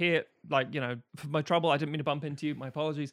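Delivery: ordinary delivery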